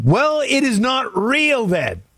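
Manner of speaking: very high, shrill hollering. Retelling own reply to dad about a PayPal message: retelling a yell. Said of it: "sorry for the yelling".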